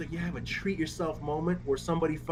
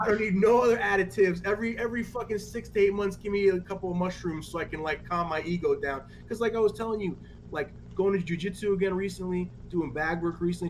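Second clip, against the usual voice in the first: ordinary talk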